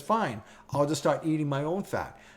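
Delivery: ordinary talk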